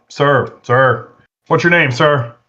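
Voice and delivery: firm, authoritative government-official tone. Talking down an armed man in a game: authoritative government employee voice. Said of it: "My best, uh, my best, uh, you know, authoritative, you know, government employee voice".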